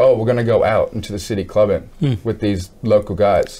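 plain

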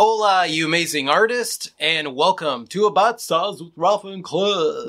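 put-on show-opening announcer delivery. Opening the rafi's tips for artists segment, in an announcer voice. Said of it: "That was a good announcer voice".

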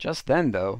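ordinary delivery

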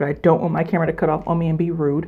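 fast, rushed, hurried speech.

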